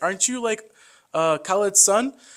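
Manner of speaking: surprised recognition. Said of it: "They're like".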